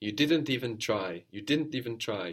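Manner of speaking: ordinary delivery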